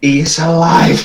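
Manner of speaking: hushed, whispering voice. Telling a companion in character that the crayfish lives: whispering.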